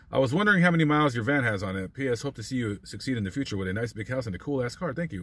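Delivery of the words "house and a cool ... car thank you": ordinary talk, nothing marked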